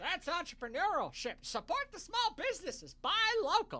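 put-on hillbilly accent. A speaker, just because it seemed funny, puts on a hillbilly voice. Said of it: "I was giving that the hillbilly voice".

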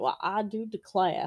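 acted rooster character voice. Talking about leghorn chickens, doing a Foghorn Leghorn voice. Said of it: "Isn't that the Looney Tunes rooster?".

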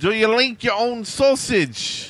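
put-on Scottish accent. Trying a Scottish accent for a listener's request: bad Scottish accent. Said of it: "I guess that's Scottish".

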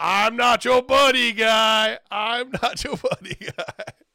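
shrill, very high, very loud repeated shouting. Recalling what he shouted back every show, retelling yelling the catchphrase. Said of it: "Jamie's just yelling".

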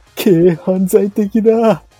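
intense, loud, high anime character voice. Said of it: "カルーアミルクを飲んだ時のカイジの真似".

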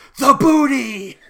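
very high, very loud stage-whisper shout. Retelling how JoJo reacted on camera: imitating JoJo's whisper shout. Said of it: "whisper shouts".

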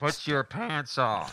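high, loud, slow scolding voice.

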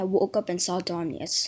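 plain reading voice

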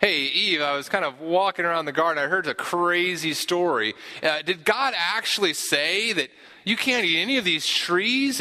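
incredulous serpent voice. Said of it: "he's kind of incredulous, is like".

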